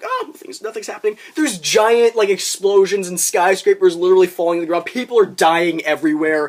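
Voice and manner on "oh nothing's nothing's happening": put-on nonchalant, casual, breezy unbothered tone. Mocking film extras who walk around unbothered: imitating people acting casual.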